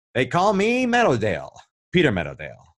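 showy, animated sing-song character voice with swooping pitch. Asked what the character sounds like, doing Peter Meadowdale voice. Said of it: "so what does he sound like?".

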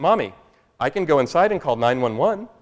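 put-on calm speech. During an emergency, retelling Samantha's line to her mommy, imitating calm speech. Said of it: "Samantha very calmly says".

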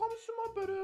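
high, gentle motherly voice.

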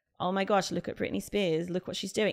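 ordinary delivery

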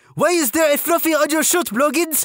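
put-on French-Canadian drill sergeant accent. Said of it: "female French-Canadian sergeant with this accent".

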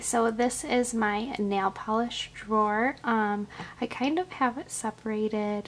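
soft, soft-spoken voice. Showing a nail polish drawer while someone sleeps in the next room, talking softly. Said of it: "I'm talking soft because Eli is sleeping".

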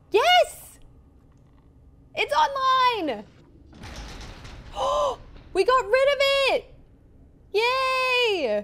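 high, loud, excited triumphant cheer.

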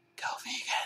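faint, hushed, very quiet whisper. A voice breaks into the narration, whispered. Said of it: "a voice whispered".

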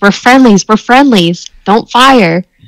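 high, shrieking scream. Voicing a character trying to stop soldiers firing: screaming. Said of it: "she just screams".

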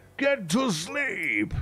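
very high-pitched, pitched way up voice. Imagining Brian Blessed saying a line: Brian Blessed voice. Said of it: "Brian Blessed".

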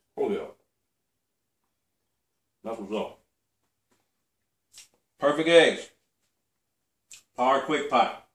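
speaking through a mouthful of food. Host taking a bite of eggs during an episode, talking with mouth full. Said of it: "Talking with my mouth full".

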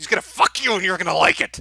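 loud, aggressive, forceful in-your-face delivery. Acting out a man aggressively telling his feelings, mock-aggressive declaration. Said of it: "How do you aggressively tell somebody something?".

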